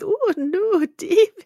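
shrill, very high-pitched and loud. Picturing the same scene, imitating Ruth.

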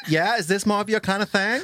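put-on American accent. Teasing another speaker about his motives: put-on american accent. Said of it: "if we were American".

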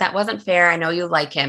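ordinary talk

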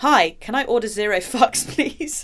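loud reading aloud through laughter. Host reads an Instagram caption aloud, laughing while reading. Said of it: "I'm laughing at this reportage".

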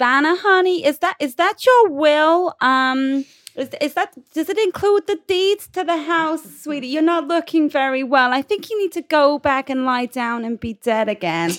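syrupy condescending voice. Game master voices a character speaking to vanna, in a syrupy condescending voice.

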